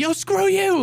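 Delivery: high-pitched yelling. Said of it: "just yelling out".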